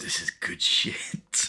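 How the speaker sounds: hushed whisper. Acting out a character watching others with a camera: whispering. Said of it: "And he whispers".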